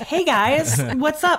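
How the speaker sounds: high, drawn-out, fake-casual, trying too hard. Imitating a character faking a casual conversation: imitating someone pretending casual chat. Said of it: "he's just walking out and being like".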